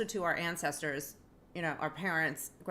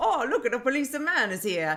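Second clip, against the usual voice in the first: put-on Italian accent, higher, louder; 8 semitones higher, 8 dB louder than usual. Retelling what you said when a cop walked by in the school hallway, italian accent. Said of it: "talk in English with an Italian accent".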